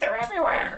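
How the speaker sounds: mock panicked cry, high-pitched.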